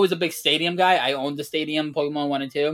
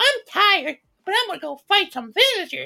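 badly done put-on voice, very high in pitch. Arguing that a game is overrated, doing a bad Link impression. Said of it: "that's my bad Link impression".

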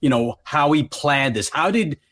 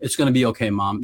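put-on flat, emotionless deadpan, lower; 4 semitones lower than usual. Retelling what a woman said to her upset mother, imitating a deadpan voice. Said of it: "She was like deadpan".

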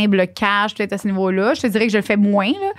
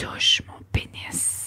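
seductive whisper

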